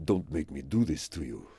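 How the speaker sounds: very deep, very soft, hushed warrior king voice. Echoing the other speaker's attempt at the line from the movie 300, in a Leonidas voice. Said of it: "you just try and put on his voice then?".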